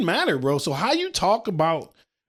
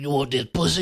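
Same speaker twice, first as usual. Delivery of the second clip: harsh, rough, pushy, aggressive voice; 5 semitones lower than usual. Picturing a rough-faced woman saying the line: imitating a rough, aggressive voice. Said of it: "this rough face having just".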